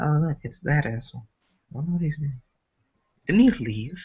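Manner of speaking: hushed, quiet stage whisper. Playing a character who spots a rival walking in: half-whispering in character. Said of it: "whispering to Darius".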